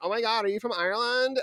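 put-on gushing, excited, very high American girl voice. Telling how a group of american girls in a bar reacted, imitating american girls. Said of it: "the like group of American girls hear me and are like".

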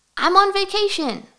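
excited, bursting with excitement. Demonstrating a better out-of-office subject line: excited. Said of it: "Could you hear the excitement in my voice?".

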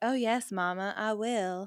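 very slow, stretched-out southern drawl on each word. Retelling a scene, Brenda replies to Cindy: Brenda in a Southern drawl. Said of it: "speaking in a southern drawl like".

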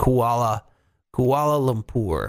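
very slow, careful, drawn out syllable by syllable. Speaker sounding out a place name they struggle to say aloud, very slowly. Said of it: "I have to say it very slowly".

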